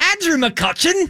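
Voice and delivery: put-on British accent, pitched way up high. Everyone on the show takes a turn saying a name in their best British accent. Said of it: "Everybody say Andrew McCutcheon in their best British accent".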